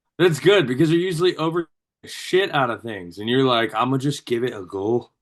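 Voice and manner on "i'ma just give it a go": offhand, casual line in put-on Scottish accent. Imitating the other speaker's words back at them: scottish accent. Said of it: "There's that Scottish accent".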